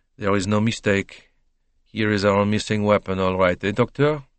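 ordinary delivery

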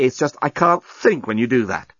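ordinary delivery, nothing marked

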